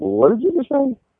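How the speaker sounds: very high-pitched cartoon dog voice. Retelling how his people reacted to him, in a Scooby-Doo voice. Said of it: "with the Scooby-Doo voice".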